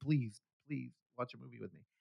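acted, very quiet, soft begging plea. Telling a story about hanging out with her, retelling a plea. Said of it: "I was pleading".

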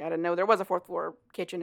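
ordinary delivery

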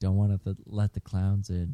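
imitated whisper. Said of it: "I whisper to myself".

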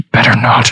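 hushed whispering voice. Voicing a character who whispers a threat: whispering. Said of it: "And he just whispers".

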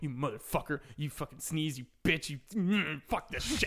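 angry, worked up, rising into a fury. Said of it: "kinda psyching himself up".

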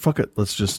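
plain

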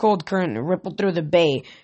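ordinary delivery

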